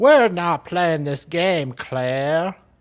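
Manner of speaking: put-on Australian accent. Acting out a senior constable's lines from a news story: Aussie accent. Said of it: "I have to work on your Aussie accent".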